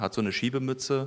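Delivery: ordinary delivery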